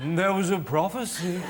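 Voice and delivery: put-on old blind seer voice. Showing how a prophecy should be announced, in a blind old man prophecy voice. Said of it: "Like you're a blind old man".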